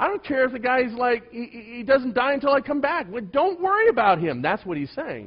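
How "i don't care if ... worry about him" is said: dripping sarcasm, very high and swooping. Acting out Jesus turning to Peter: imitating Jesus being sarcastic. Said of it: "You realize Jesus is using sarcasm?".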